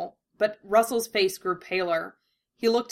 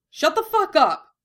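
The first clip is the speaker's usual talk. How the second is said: sharp, loud, high snapped delivery; 9 semitones higher, 7 dB louder than usual. Asked incredulously whether he lost someone, the speaker snaps back. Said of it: "Russell snapped".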